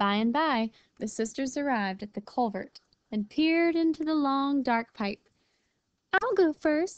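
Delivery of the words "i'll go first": brave, speaking up, higher pitch. Arriving with her sisters at a dark pipe, Lily speaks up, brave. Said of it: "Lily volunteered bravely".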